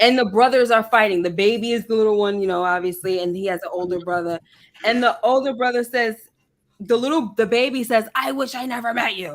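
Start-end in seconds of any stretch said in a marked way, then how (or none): 8.2-9.4 soft voice of a grown man. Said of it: "with a grown man voice".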